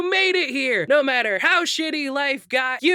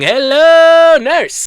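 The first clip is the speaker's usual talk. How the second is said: very loud, belted, with hello drawn out; 12 dB louder than usual. Reading out facts about today, then blurting a line: Wakko Warner impression. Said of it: "Did you like my impression?".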